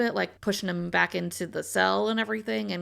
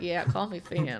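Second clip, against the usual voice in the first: low voice, dropped a notch deeper. Imitating a more confident Finney introducing himself: imitating Finney's deeper voice. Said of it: "a little deeper voice from it".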